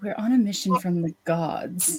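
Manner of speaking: hushed voice, brought down low. Game master voices a woman questioning a prisoner, in a lowered voice. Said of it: "and she's gonna lower her voice".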